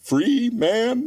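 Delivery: "free man" said with hard emphasis. Retelling a party scene where Ed Wuncler takes Granddad aside, stressing 'free man'. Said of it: "The the emphasis on free man".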